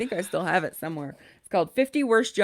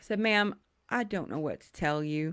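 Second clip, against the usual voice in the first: ordinary talk, nothing marked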